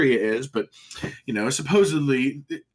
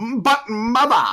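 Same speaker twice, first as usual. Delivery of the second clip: bad, pompous put-on British accent, much higher; 9 semitones higher, 5 dB louder than usual. Speaker demonstrates the accent they always go into, awful pompous British accent. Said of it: "uses my like really awful pompous British accent".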